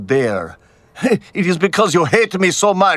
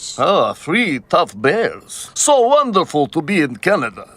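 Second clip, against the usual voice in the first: put-on Russian accent. Answering in a skit, then praising canada: russian accent. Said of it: "I recognize that voice".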